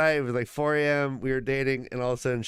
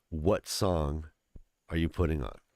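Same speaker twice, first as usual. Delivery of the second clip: intense voice, lower and quieter; 10 semitones lower, 5 dB quieter than usual. Retelling a friend's late-night question: imitating an intense friend. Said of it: "he gets all intense".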